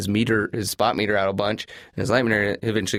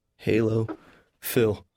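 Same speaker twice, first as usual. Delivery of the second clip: plain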